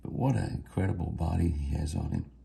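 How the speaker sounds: talking quietly. Watching a deer through the window at the feeder, talking quietly. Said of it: "I'm talking kinda low".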